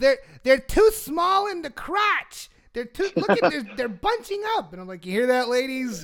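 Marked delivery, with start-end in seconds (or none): 0.0-4.7 put-on, very loud, high New Jersey accent. Retelling what a woman said about pants in a dressing room: very loud new jersey accent. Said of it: "with her very loud New Jersey accent".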